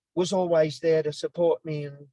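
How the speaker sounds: plain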